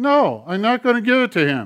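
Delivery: high, loud hand puppet voice. Acting out a back-and-forth with his puppet, speaking in the puppet's voice. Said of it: "he goes".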